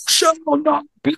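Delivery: put-on very high-pitched, ancient-sounding old man voice. Retelling words they involuntarily said when their voice changed, ancient old man voice. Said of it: "my voice literally changed to, like, an ancient, like, old man voice".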